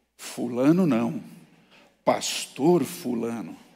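serious, grave, weighty tone. Retelling a student's phone call to the faculty, imitating his grave tone. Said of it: "com um tom grave".

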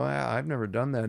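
ordinary talk

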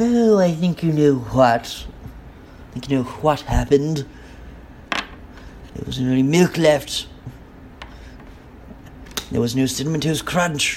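put-on cartoon baby character voice. Voicing a character who answers about the missing cereal, in the Stewie voice. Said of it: "the Stewie voice".

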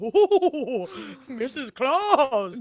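booming, jolly voice, sounding bellyaching. Explaining they can't do a spooky voice, sounding like Santa Claus with indigestion. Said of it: "I just sound like Santa Claus with like indigestion".

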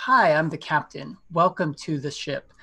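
ordinary talk

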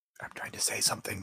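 hushed voice. Leaning in to speak in character so others can't hear: whispering. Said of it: "and whisper it".

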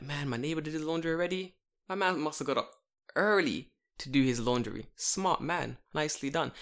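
normal talking voice

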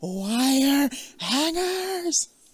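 high, slow, drawn-out shriek.

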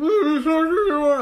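very high, loud, muffled mumbling. Retelling what someone said, in mumbled, muffled speech. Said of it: "makes you sound like you're mumbling ... like that".

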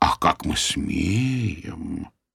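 ingratiating, very slow, insinuating drawl. Narrator replies to an accused man's indignant protest, insinuating. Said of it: "вкратчиво проговорил я".

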